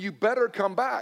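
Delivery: mild, play-acted screamed yell, kept light. Retelling how his wife called him from the bathroom: imitating someone screaming. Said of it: "she's screaming".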